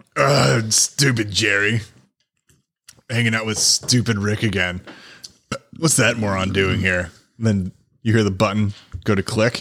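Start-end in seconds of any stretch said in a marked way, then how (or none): 0.1-7.1 sounds broadcast through an overhead intercom. Voicing Rick over an intercom after Jerry is electrocuted: Rick voice. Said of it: "the magical intercom come in over, overhead again of Rick".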